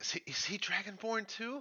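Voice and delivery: high, put-on half-whisper. Asking a companion quietly in character about another: half-whispering in character. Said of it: "I'm gonna kinda whisper to Ren-".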